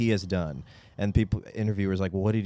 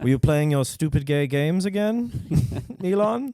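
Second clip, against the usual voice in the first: put-on German accent, pitched higher; 7 semitones higher than usual. Acting out a father siding with bullies at the hospital, German accent as Errol. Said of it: "German now".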